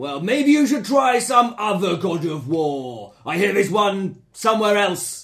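big angry man character voice. Playing a character answering a question in a role-play scene, big angry man voice. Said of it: "I only have one big angry man voice".

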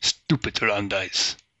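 very low gruff voice. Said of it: "Very low voice, very gruff".

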